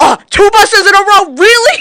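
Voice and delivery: put-on exasperated, sarcastic, loud, high, drawn-out outburst. Telling a story about an old man in a car, retelling a man flipping out. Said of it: "he starts flipping out about the two buses".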